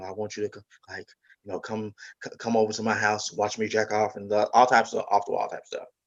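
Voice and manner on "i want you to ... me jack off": hushed, secretive half-whisper, kept very quiet. Speaker retells what a man said, imitating a hushed half-whisper. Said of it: "he was talking like this hushed whispered voice".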